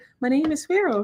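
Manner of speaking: put-on sweet, tiny, high, cute little-kid voice. Retelling how he said his name clear as day; imitating his little cute voice. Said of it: "in his little cute voice".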